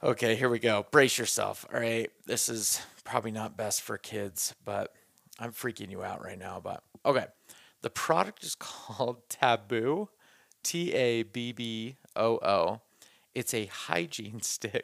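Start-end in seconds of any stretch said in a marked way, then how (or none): 7.8-14.8 very slow delivery with giggles breaking in. Naming a product from its label, laughing while talking. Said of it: "I can't even say it without laughing".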